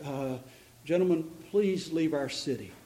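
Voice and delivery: very meek, soft voice.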